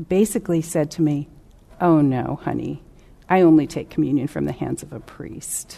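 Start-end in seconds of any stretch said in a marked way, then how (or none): 1.8-5.8 patronizing, condescending, dismissive, with an angry undertone. Retelling a patient's refusal of communion: imitating a condescending, dismissive tone. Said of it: "said it in such a condescending way".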